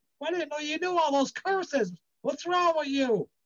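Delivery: mock yelling, high-pitched. Retelling how an aunt came downstairs after his night screaming: imitating someone yelling. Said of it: "she came downstairs yelling that".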